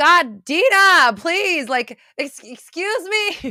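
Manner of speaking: very high, drawn-out calling out. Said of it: "This is your higher self yelling at you".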